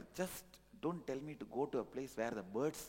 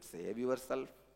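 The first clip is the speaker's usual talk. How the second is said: plain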